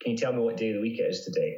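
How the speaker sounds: usual speaking voice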